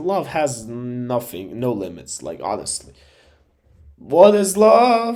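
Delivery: slow voice cracking and breaking up. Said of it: "you can hear my voice cracking down".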